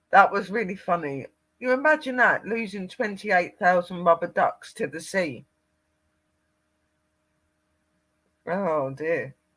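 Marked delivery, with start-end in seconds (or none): 1.5-9.2 talking through laughter, higher pitched. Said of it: "I just can't stop laughing".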